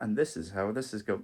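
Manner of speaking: mock monotone lecturer. Speaker mimics someone talking in online uni videos, mock monotone lecturer. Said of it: "keep it somewhat monotone".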